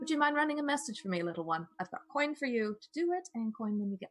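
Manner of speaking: gentle, tender voice. Playing a rider asking a street kid to run a message, gentle voice for a kid. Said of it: "my gentle voice for talking to kids".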